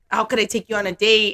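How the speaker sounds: ordinary delivery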